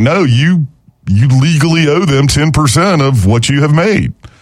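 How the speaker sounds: plain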